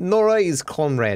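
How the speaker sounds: speaking in a put-on Russian accent. Voicing a line, the speaker puts on a russian accent. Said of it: "That's my Russian accent".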